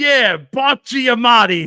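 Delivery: put-on thick, loud Brooklyn Italian accent. Retelling a moment that made the speaker lose it, imitate a guy's reply in a very Brooklyn Italian accent. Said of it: "in the most like Brooklyn Italian accent".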